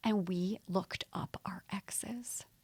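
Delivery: slow, hushed, secretive whisper. Telling a vacation story, whispering so Rob doesn't hear. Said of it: "I'm whispering so Rob doesn't hear".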